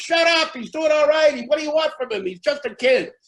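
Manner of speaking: very high, heckler-style crowd yelling. Retelling another group in the audience yelling back: imitating a crowd yelling. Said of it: "they're yelling".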